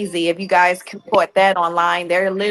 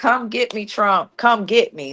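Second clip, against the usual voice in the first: mock cocky street-tough voice with gangster swagger; 2 semitones higher than usual. Retelling how a president first answered a challenge, mock-gangster taunt. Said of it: "he was really gangster with it".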